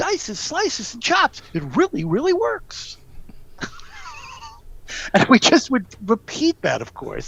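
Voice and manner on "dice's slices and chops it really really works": very high, tiny pitchman-style little-guy voice. Recalling an ad, the speaker quotes its little guy: Dice's Slices ad guy's high voice. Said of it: "He talked in a high voice".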